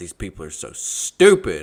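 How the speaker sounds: loud, hollered yell. Retelling what he yelled in front of all the customers: retelling a yell. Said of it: "he yelled it in front of all the customers".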